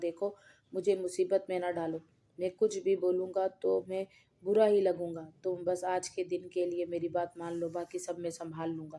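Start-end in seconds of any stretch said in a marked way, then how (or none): none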